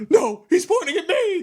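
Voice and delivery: acted frantic cartoon panic, very high and loud. Retelling a wrestler's reaction to a bat: imitating Hulk Hogan freaking out. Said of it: "cartoonishly freaking out".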